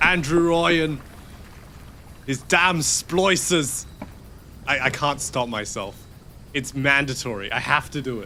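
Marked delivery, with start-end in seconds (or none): 0.0-3.8 put-on thick Irish accent, higher and slower. Admitting they can't stop copying how a character talks, the speaker does Atlas's thick Irish accent. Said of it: "Atlas talks in a in a thick Irish accent".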